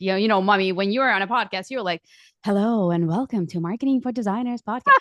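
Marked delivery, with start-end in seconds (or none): 2.4-4.9 fake, stiff, stuck-up professional announcer-style voice. Retelling how her kids mock her podcast intro, in a mock stiff professional podcast voice. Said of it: "And they do this voice".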